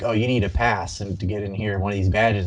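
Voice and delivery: normal talking voice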